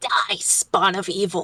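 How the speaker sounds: low growl from the throat. Describing her attacks, the speaker voices her line in Abyssal, growling. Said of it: "she growls".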